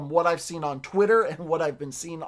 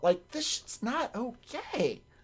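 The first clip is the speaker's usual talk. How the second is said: voice cracks and breaks partway through; 7 semitones higher, 7 dB quieter than usual. Speaker talking about voice acting, voice cracking mid-sentence. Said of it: "As my voice cracks".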